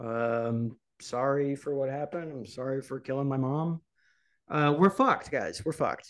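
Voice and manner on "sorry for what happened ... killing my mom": put-on empty, mechanical, flat, emotionless delivery. Retelling a boy's words to police, imitating an apology without empathy. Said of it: "Without any empathy or compassion".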